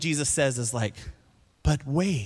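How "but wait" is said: soft, airy voice, all breath. Mocking how Jesus is always portrayed as peaceful, airy Jesus voice. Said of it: "it's always this airy voice".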